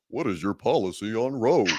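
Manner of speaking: poorly done cartoon starfish voice. Imitating the moderator of a debate, bad Patrick Star voice. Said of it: "the Patrick Star voice".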